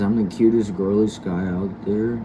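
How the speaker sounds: ordinary delivery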